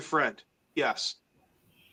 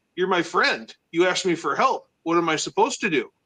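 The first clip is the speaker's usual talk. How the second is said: normal talking voice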